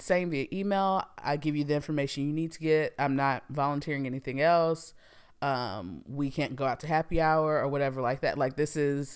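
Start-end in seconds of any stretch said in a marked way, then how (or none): none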